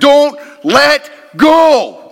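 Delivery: high, loud, slow pleading shout.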